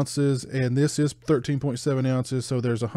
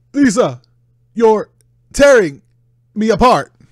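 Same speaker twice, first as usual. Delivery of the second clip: high, loud, overacted, hammed-up delivery; 8 semitones higher, 12 dB louder than usual. Answering a viewer request: Shatner-style Tommy Wiseau impression. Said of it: "Can you do a Shatner-style Tommy Wiseau impression?".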